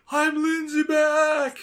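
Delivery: very high-pitched, shrill yelling. Picturing a character driving away, imitating someone yelling. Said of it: "driving the car while yelling".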